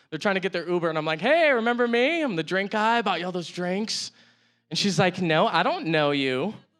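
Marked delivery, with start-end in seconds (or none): 5.3-6.6 very slow, deliberate drawl in a woman's voice. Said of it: "That's the best impression I have".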